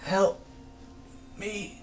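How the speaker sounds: very high, strange voice unlike his own. Game master voices a character who looks over to you, in a voice not his own. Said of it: "in a voice that doesn't match his own".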